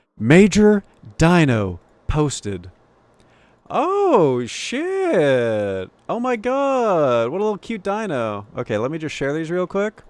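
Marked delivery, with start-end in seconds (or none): 0.2-2.7 loud, computerized PA announcer voice. The speaker rereads a message aloud in the Half-Life announcer voice. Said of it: "I read that in the Half-Life voice".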